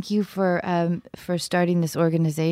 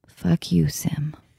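very soft, gentle delivery. Swearing at a guest as an every-episode tradition: said very gently. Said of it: "I'm gonna say it very, very gently".

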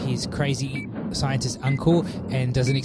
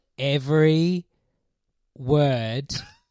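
put-on painfully slow, snail-paced speech. Describing a principal who talked at a snail pace: imitating painfully slow speech. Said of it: "that's literally the pace that she's talking at".

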